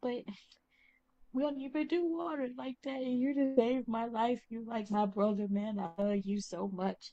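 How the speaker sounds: weepy, blubbering, sobbing through the words. Voicing a character who thanks the others for saving his life: acted sobbing. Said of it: "he's just sobbing on your shoulder".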